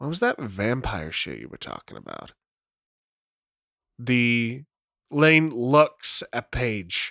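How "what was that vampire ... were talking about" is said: low voice, sunk down a notch. Voicing a character asking about vampire talk: dropped voice. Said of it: "drops his voice".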